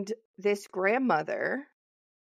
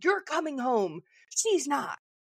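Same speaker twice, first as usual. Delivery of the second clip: put-on angry old woman voice, higher pitched; 5 semitones higher than usual. Retelling a scene where twin girls are separated, imitating an angry grandmother. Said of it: "She was so angry".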